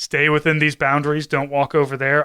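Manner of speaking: plain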